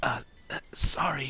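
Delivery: quiet, timid whispering. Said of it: "Izuku just says".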